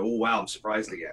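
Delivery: plain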